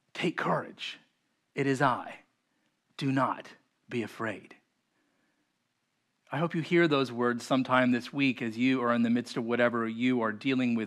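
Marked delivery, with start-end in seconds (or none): 0.1-4.5 soft, calm, kind, comforting voice. Retelling what the God who walks on water says, in a calm, kind voice. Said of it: "He says in a calm, kind voice".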